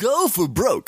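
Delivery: fighting game announcer voice. Trying to recall an example, the speaker does a Street Fighter Zero 3 announcer voice. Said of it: "an announcer in a fighting game".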